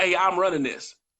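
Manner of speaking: ordinary delivery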